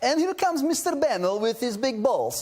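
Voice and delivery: funny put-on Russian accent. Retelling what a man would say when he came to work, in a funny Russian accent. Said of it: "Why did it have to be Russian?".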